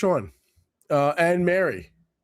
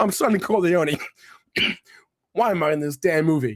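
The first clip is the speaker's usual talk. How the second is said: bitter, resentful, put-upon griping tone. Describing an actor who doesn't want to be in a movie: resentful James Caan impression. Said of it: "Just the resentment that he is there".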